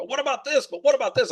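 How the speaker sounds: very high, rapid, rattled-off excited screaming. Recalling watching a conference webinar from home, retelling own excited screaming. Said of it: "screaming at the screen".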